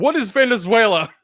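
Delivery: piercing, shrill scream, very high and very loud. Retelling a trailer parody with an Alex Jones voiceover: screaming Alex Jones impression. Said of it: "It just screams at it".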